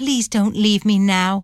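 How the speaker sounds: usual speaking voice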